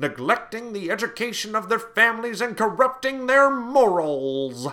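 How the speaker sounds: very high, shrill, loud preacher sermon tone. Speaker quoting a preacher who opposed alcohol; preacher voice. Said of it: "that was my best, like, preacher voice".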